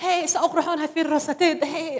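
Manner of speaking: doll-like voice with Somali sound. Retelling voicing a Barbie head in Somali for a child: put-on Somali voice. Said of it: "make Somalian voices".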